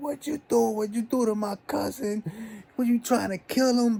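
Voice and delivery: frantic, shrill, very high-pitched scream. Retelling how his cousin screamed at her man: imitating someone screaming. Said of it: "she's screaming at her man".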